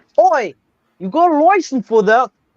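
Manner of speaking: high, put-on Australian accent, done authentically. Speakers take turns showing how the phrase is said: put-on Australian accent. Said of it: "They do it like this".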